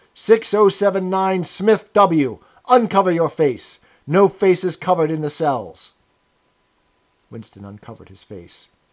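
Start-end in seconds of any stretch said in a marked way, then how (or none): 0.2-5.9 loud, barked yelling through a speaker. A narrator reads the voice from the telescreen calling to Smith, yelling. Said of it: "yelled the voice from the telescreen".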